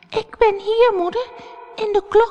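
tiny, very high, scared little voice. Reading a fairy tale, voicing the youngest little goat answering its mother: frightened little voice. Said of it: "zei hij met een angstig stemmetje".

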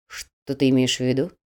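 wary, on guard. A narrator reads the dead man replying to the other man, wary, on guard. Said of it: "насторожился мертвый".

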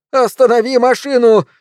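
shrill, piercing, high shriek. Uncle Vernon, grabbing Mary's arm while she drives, cries out: piercing shriek. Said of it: "пронзительно закричал дядя".

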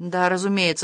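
ordinary delivery

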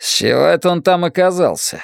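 grumbling, grousing tone. Reading a story, Orvik reacts to the broken lock on the hatch: grumbling. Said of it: "буркнул Орвик".

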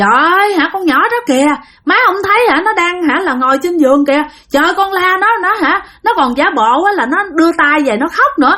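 high, frantic hollering.

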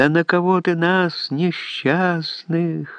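high, slow, drawn-out keening wail.

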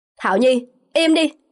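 loud, forceful speaking. A man orders an angry woman to be quiet during a quarrel: raised voice. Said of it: "[name] lớn tiếng".

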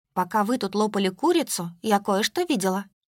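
ordinary delivery

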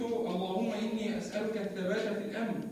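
ordinary talk

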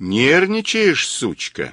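gentle, affectionate, tender delivery. Mazur asks his captive a question, gently. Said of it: "ласково спросил Мазур".

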